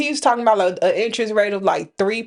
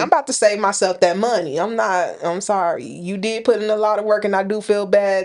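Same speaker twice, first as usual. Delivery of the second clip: normal talking voice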